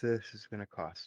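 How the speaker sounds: quiet mutter under breath. Muttering in character at a tailor shop: muttered under breath. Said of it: "Under my breath".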